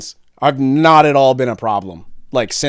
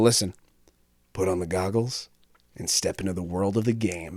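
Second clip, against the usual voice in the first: mock douchey delivery, lower and quieter; 6 semitones lower, 11 dB quieter than usual. Retelling own joke as a tech presenter at a conference: imitating a douchebag. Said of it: "I say it like such a douchebag too".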